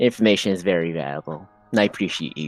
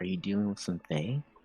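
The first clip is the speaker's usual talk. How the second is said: whispered delivery; 12 dB quieter than usual. Playing a character who goes up to another quietly: whisper. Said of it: "in, like, a whisper".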